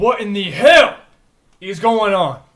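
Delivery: loud, high shouting from a few yards off. Storyteller voicing Harper calling out from a few yards away, yelling out. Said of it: "just kind of yells out".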